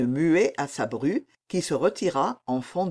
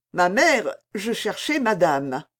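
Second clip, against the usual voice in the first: ordinary delivery, nothing marked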